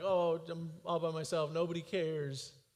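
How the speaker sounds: acted, slow, mopey, drawn-out moan. Acting out the voice heard in a dark time: imitating a mopey voice. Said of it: "that mopey voice that you hear".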